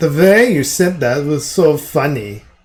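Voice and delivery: acted German-accented speech. Repeating someone's reply to Prince, with a put-on German accent. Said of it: "give it a nice German accent".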